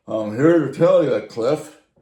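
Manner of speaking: huge, very loud, bragging booming voice. Retelling how Ray came over to talk to Dad about his car: big booming voice. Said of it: "this guy had a big booming voice".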